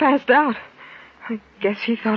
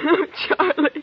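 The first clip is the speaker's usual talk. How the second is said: crying, tearful, pitched-up sobbing through the words; 5 semitones higher than usual. Telling Charlie that someone just tried to kill them, crying while talking. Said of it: "will you stop crying long enough".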